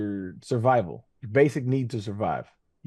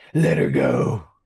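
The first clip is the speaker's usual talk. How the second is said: put-on superhero voice, deep, loud, pushed out; 5 semitones lower, 7 dB louder than usual. Speakers joking about how Batman talks, Batman voice. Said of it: "That's how Batman talks".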